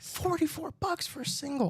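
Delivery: very high, hushed whisper. Telling Steven a low price so too many watchers won't hear, whispering. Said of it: "I'm I'm whispering this because it".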